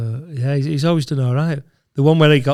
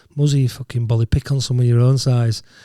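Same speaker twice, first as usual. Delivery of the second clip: ordinary talk, nothing marked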